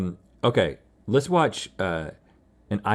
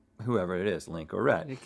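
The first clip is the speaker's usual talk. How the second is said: plain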